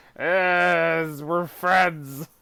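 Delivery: loud, forced friendly tone, "yes" stretched. Describing a forced-looking photo pose of Harrison Ford: imitating Harrison Ford, forced friendliness. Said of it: "Harrison just kinda".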